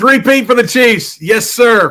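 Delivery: emphatic, clear and loud delivery. Host asks [name] to announce his correct prediction, loud and clear. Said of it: "say it in a loud and clear voice".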